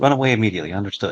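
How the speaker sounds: quiet mutter under breath. Voicing a character answering the plan to hang back: muttered under her breath. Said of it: "says that under her breath".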